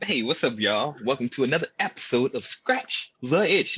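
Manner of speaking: big, booming show-announcer delivery. Opening a new episode of scratch the itch, in an announcer voice. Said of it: "You like my uh, announcer voice now?".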